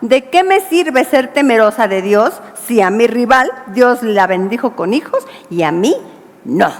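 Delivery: ordinary delivery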